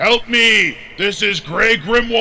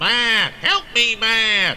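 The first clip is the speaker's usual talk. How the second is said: put-on nasal Southern twang. Coached by another, a character tries on a friend's voice: Franklin's southern twang voice. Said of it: "he had a bit of a southern twang".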